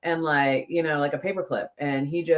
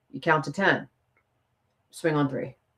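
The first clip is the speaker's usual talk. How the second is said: deadpan, calm, matter-of-fact, dead serious delivery. Retelling advice from dad: imitating dad, calm and dead serious. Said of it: "Dead serious".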